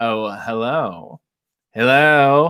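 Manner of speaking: sultry, husky tone. Reading out a chat greeting, the speaker says it sultry. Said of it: "You can assume I said that in a sultry voice".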